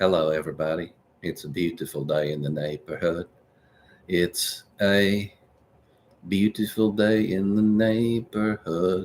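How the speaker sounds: understated, hushed, low and soft voice. Reading a viewer comment, then showing what Mister Rogers sounds like: Mister Rogers voice. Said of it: "Mister Rogers is more like this".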